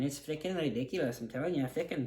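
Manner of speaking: put-on Irish accent, saying fickin. Joking about a movie's dialogue, slipping into a put-on Irish accent. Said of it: "now I'm talking like, you know, an Irish person".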